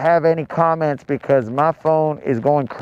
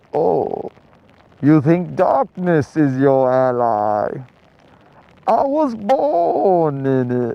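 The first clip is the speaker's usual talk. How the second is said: muffled, very slow, swooping villain voice as through fabric. Talking from inside a zipped-up jacket to viewers, doing a Bane voice. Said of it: "I probably sound like Bane right now".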